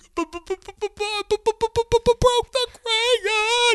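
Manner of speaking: very high, loud bawling stammer on b. Retelling being a bawling child telling mom about a crayon: imitating own childhood sobbing. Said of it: "I'm, like, bawling".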